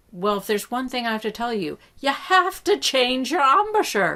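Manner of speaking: put-on Irish accent. Retelling a man's reply to a kid's question, Irish accent. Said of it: "he said that in a great Irish accent".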